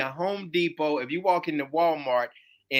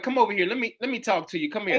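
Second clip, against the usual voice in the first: usual speaking voice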